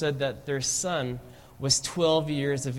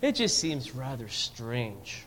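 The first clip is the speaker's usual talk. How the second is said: put-on sanctimonious tone; 3 semitones lower, 4 dB quieter than usual. Retelling what Frank said, imitating Frank's sanctimonious voice. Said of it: "in a sanctimonious voice".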